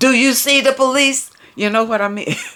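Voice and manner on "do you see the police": irritated, annoyed, put-on annoyance, pitched up. Reading out the driver's next reply: imitating an annoyed voice. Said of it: "replied in an annoyed voice".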